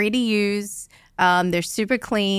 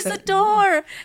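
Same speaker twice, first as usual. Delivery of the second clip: put-on, very high-pitched shouted voice; 12 semitones higher than usual. Retelling how a woman on the toilet yelled to close the door: imitating someone yelling. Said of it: "she's yelling at me".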